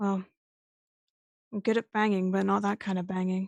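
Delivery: muttered under the breath. Voicing a character reacting to the guns: muttered under her breath. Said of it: "Silk just says under her breath".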